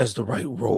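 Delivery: solemn, earnest, very serious tone. Describing a character posing with his hat who speaks, in a very serious tone. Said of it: "in a very serious tone".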